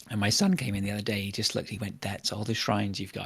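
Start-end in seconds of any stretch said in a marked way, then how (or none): 2.0-3.3 put-on voice dripping with disgust. Retelling a son's remark on the shrine tally: imitating a disgusted tone. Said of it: "The disgust in his voice".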